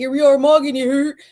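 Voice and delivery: goofy, offhand, aloof put-on voice, high and loud. Mocking the Mog Squad as not serious: goofy aloof Mog Squad impression. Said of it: "That was a good exper-, impression".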